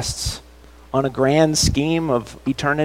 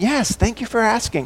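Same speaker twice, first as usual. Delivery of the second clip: put-on, remarkably cheery, higher-pitched voice; 8 semitones higher than usual. Retelling what Megan said at the end of the conversation, imitating Megan's cheery voice. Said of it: "in a remarkably cheery voice".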